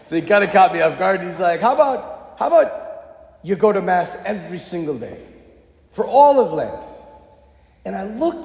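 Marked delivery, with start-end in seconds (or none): 1.6-6.8 put-on Irish accent, slow and taking its time. Speaker retells what a man suddenly suggested to her, in his irish accent. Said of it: "in his Irish accent".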